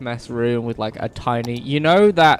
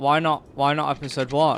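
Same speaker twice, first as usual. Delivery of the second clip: usual speaking voice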